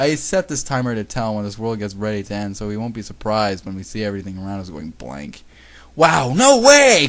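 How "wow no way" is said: shrill, very high, very loud happy outburst of delight. Reacting to a friend's timer for when their world ends, happy. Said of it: "Kagami said happily".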